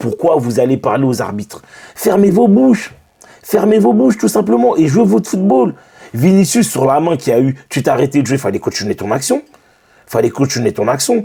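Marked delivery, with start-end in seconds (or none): 0.0-5.7 worked-up, heated angry outburst, climbing higher in pitch. Speaker addressing the players of his team after the match, angry. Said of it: "je suis énervé".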